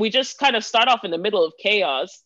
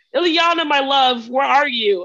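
blissfully dazed, happy voice, pitched up; 5 semitones higher than usual. Describing a man in a book calling for his wife amid chaos, mock dazed happy shouting. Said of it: "the dazed happiness and you're just shouting".

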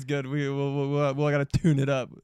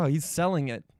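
ordinary delivery

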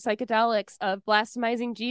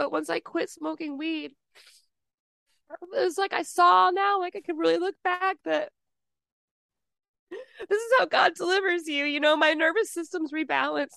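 tearful speech while crying, higher; 6 semitones higher than usual. Telling another speaker about quitting smoking weed, crying while talking. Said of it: "I know I'm crying right now".

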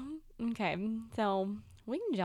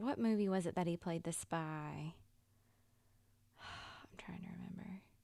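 whisper, much quieter; 2 semitones lower, 6 dB quieter than usual. Speaker trying to recall which movie a crush was in, whispering. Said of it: "you're whispering again".

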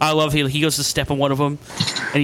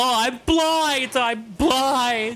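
mock sarcastic cry, very high and very slow; 9 semitones higher than usual. Retelling a movie scene where Evil Ash is poked: imitating a sarcastic cry. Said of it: "very sarcastic".

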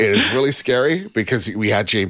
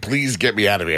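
speaking as a cat. Voicing a cat locked in the room: speaking as the cat. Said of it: "he's like".

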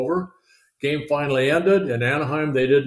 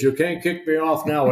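put-on Dutch accent, heckling tone; 3 semitones higher than usual. Retelling what a man told the umpire at a ballgame, in a Dutch accent. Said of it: "In his Dutch accent".

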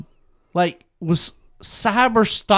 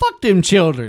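ordinary talk, nothing marked

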